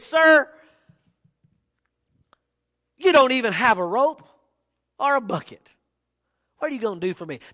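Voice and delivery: put-on curt, snippy tone. Retelling what the woman at Jacob's well said to him, mock-snippy retort. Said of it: "she gets a little snippy".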